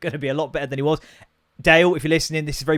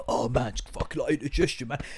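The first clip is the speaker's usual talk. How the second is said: mock complaining, quieter; 8 dB quieter than usual. Retelling how a friend moaned after eating too fast: imitating a friend complaining of indigestion. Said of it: "being like".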